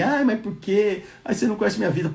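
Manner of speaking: mocking, high, whiny crybaby whine. Mocking people who complain about their hard lives: mocking imitation of whiny complaining. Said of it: "negócio de ficar de chororô, de mimimi".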